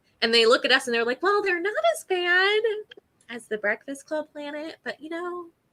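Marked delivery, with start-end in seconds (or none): 1.2-5.5 put-on valley mom voice, higher pitch. Imitating aliens talking about humans in a Valley Mom voice. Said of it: "changing my voice to make them sound like Valley Moms".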